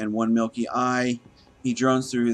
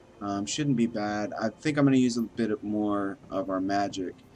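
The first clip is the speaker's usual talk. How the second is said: plain reading voice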